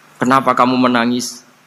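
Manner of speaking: ordinary talk, nothing marked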